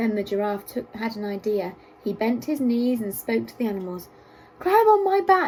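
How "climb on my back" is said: small, squeaky, high-pitched voice. Reading a story aloud, the giraffe tells the animals: squeaky high voice. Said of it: "he squeaked in his high voice".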